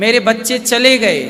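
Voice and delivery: ordinary talk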